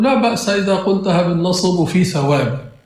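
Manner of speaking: ordinary delivery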